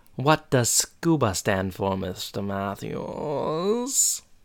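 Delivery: very slow, deliberate, every word drawn out. Performing a teacher's classroom line after being asked: Mister Feeney voice. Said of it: "I need you to say it like Mister Feeney".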